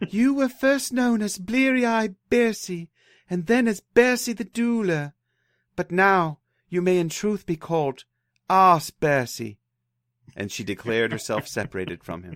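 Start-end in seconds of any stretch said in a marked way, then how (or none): 0.1-9.6 very high, slow put-on woman's voice. Reading a saga aloud, voicing a wife's parting words to her husband, put-on woman's voice. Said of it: "You never get to make fun of my women's voices again".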